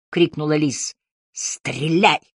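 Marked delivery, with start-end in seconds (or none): 1.3-2.2 growled, snarling. Harry, held by an attacker, answers Lis's shout, growled. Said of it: "прорычал Харри".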